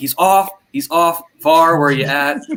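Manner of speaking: loud shouting. Retelling watching a replay of a goal: imitating yelling at the TV. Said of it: "yelling at the T V".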